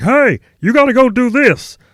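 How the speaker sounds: high-pitched, booming, loud, slow, drawn-out voice. Recall for listeners how a direct sergeant gave all his orders, impersonating Sergeant Wheat. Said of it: "I used to impersonate it".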